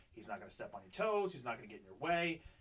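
ordinary delivery

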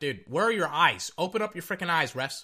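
ordinary delivery

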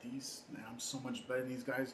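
salty under-breath grumble. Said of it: "he's so salty".

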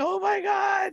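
put-on very high, giggling, laughing outburst. Retelling his reaction on hearing another racer's remark, retelling laughing. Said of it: "I'm sitting there just like laughing".

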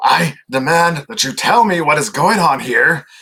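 bad gator voice, agitated and worked up. Voicing an on-screen gator who switches to common speech: agitated gator voice. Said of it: "clearly just agitated as all hell".

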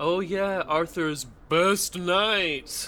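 dry, ironic, sarcastic tone. Asked about Lancelot, a character replies, sarcastic. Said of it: "Why the sarcasm?".

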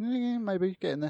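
high cat-like voice. Answering whether the sick cat is better, speaking as the cat: cat-like voice. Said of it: "Why did you sound like the cat".

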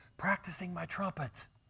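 hushed voice.

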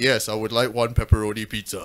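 very low, forced-deep, pushed-down voice. Retelling ordering pizza by phone: imitating own put-on deep voice. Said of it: "I would try and deepen my voice".

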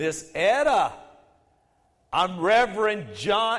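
very loud, high shout, each word enunciated. Speaking right into a woman's ear to introduce himself, as loud as he could. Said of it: "I said as loudly as I could".

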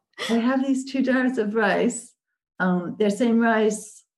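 speaking in a sweet manner. Quoting a man who came over with jars of rice; imitating a sweet way of speaking. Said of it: "I know it's terrible that I'm doing an impression".

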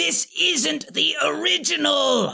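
rough, high bellow. The Chaos Witch grows sick of the unruly triplets, Chaos Witch bellowing. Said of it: "The Chaos Witch bellowed".

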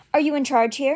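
barked out. He turns back to the first man, barking a question. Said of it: "he barked".

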